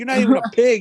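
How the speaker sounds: angry ranting voice. Retelling how a man reacted to a security guard: imitating someone going off. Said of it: "he went off".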